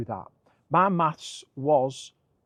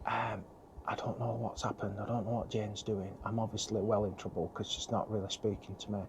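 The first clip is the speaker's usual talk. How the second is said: speaking in a whisper; 5 semitones lower, 11 dB quieter than usual. Updating viewers while another person searches the cupboards, whispering. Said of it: "I'm whispering".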